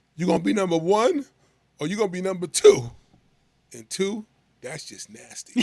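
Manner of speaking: stern, dead-serious delivery, loud and high. Retelling a coach's pregame speech to the team: imitating Coach Major, dead serious. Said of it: "so he's being dead serious".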